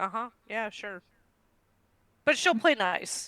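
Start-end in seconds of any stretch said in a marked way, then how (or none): 0.0-1.0 put-on skeptical tone, much quieter. Retelling how a woman reacts to a friendly gesture she sees through, mock-skeptical. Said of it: "she can see through the entire thing".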